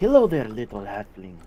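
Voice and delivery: very loud, booming cat-creature voice. Voicing a tabaxi who approaches a halfling: tabaxi voice. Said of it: "would you like to do him a speedy voice".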